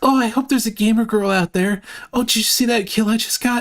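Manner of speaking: weird anime voice. Imitating how a guy jokes about finding a gamer girl while playing, weird anime voice. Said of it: "he does this like weird anime voice".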